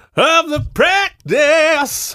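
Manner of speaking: slow, high mock TV promo announcer voice. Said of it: "let's run this ad".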